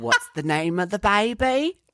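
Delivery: put-on cockney accent drifting toward Australian. Speaker retells a stressed woman asking during a sonogram, imitating a cockney accent. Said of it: "She got real cockney".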